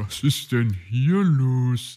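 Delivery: loud, drawn-out, spoken through laughter. Coming into a room where others do morning exercises; laughing. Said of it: "kam Puh lachend ins Zimmer".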